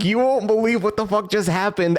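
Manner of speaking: put-on giggling through whole line, fast rush of words. Retelling picking up a call back, the speaker acts out laughing while talking. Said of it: "I pick up and I start laughing".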